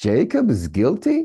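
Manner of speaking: pitch rises on "guilty". Showing how intonation changes meaning, question rise on guilty. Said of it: "So I asked".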